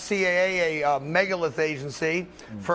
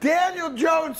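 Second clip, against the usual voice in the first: high laughing voice, word slowed down. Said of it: "that's so hard to say without laughing".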